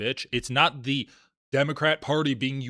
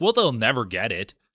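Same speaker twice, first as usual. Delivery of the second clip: scornful, derisive, dismissive scoff; 3 semitones lower than usual. Mocking how conservatives dismiss candidates' plans: imitating a derisive tone. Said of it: "say it in a derisive tone".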